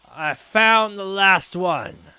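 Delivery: loud, carrying call. Voicing a man in leather armor calling down to the others: calling out down the stairs. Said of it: "calling back down to the others".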